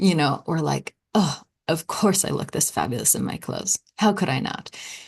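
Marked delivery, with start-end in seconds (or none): 1.1-4.7 exasperated, sarcastic, complaining grumble. Showing how to say an affirmation in a grumbling tone: sarcastic complaining tone. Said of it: "say it in your tone".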